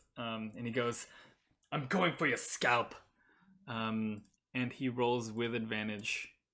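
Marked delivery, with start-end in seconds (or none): 1.7-3.0 incensed, furious, full of fury. Voicing Godfrey recklessly attacking Lilith: incensed. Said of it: "Godfrey, incensed".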